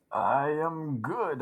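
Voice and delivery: soft, put-on Canadian accent, comic-book character voice. Co-host answers the host's greeting in character; Wolverpool voice, Canadian accent. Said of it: "You're very Canadian tonight".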